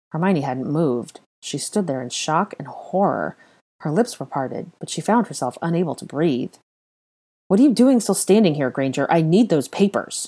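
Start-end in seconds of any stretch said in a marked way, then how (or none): 7.4-10.2 harsh, barked delivery. Narrator voicing Malfoy speaking to Granger, barked. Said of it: "Malfoy barked".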